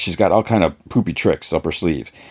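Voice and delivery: ordinary delivery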